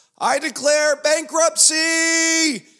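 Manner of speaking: shrill, very high, loud yell. Retelling a TV scene of a character announcing bankruptcy: imitating Michael Scott yelling. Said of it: "and he yelled".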